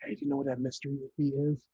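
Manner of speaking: hushed whisper. Speaking in character so others won't overhear: whispering. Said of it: "as I whisper to her specifically".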